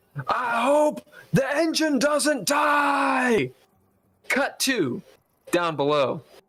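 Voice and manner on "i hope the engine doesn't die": very high, very slow, drawn-out yell. Voicing a character calling out over whipping wind: shouting loudly over the wind. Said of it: "he shouts so loud because it's so loud here".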